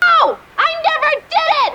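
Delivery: full-on, very high, shrill yell. Claire, in a heated group argument, yelling her answer. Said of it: "why are you yelling?".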